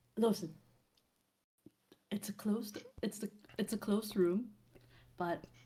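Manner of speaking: hushed, soft, kept-down voice. A narrator voicing a character who hurries back to report, hushed voice. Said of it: "in a hushed voice".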